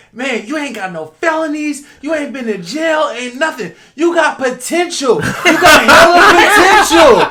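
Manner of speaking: very high, very loud, shrill, drawn-out hollering. Retelling a woman on the phone in the street: imitating a woman yelling loudly. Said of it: "she's yelling at the top of her lungs".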